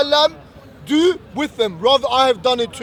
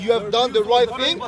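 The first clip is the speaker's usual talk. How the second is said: ordinary delivery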